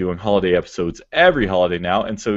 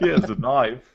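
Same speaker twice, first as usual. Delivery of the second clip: joking, mock Australian accent, pitched higher; 4 semitones higher than usual. Riffing on a knife joke with a guest on the show, joking Australian accent. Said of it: "In our incredibly accurate Australian accents".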